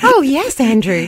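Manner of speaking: sweet, friendly, cute, high assistant voice. Teasing the other speaker about the chatbot he uses, imitating Grok's voice. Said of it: "she talks like".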